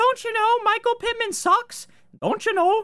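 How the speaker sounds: very high, shrill, swooping, sing-song, mocking leprechaun voice. Quoting people who kept telling him things in the offseason, in a mocking leprechaun voice. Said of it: "Sound like a fucking leprechaun".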